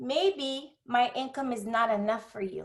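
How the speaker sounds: put-on Cuban-accented retort. Retelling what a woman told the speaker, imitating her Cuban accent. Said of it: "with her Cuban accent".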